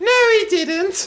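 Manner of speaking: high, loud, slow mother voice.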